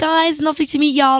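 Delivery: sweet high voice. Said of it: "she's like".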